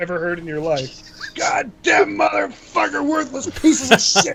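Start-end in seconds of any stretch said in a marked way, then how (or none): 1.3-4.4 very high, cursing drill-sergeant rant. Retelling a drill sergeant's string of curses: imitating a drill sergeant cursing. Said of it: "the longest string of expletives".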